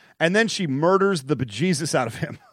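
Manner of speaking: normal talking voice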